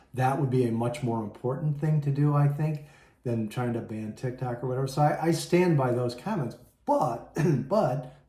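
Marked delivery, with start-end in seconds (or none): 4.9-8.1 voice breaking progressively, upset. Upset, the speaker stands by their earlier comments, voice cracking. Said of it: "my voice is cracking".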